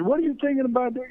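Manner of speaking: high, fast, angry coach-like yell. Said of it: "started yelling at me".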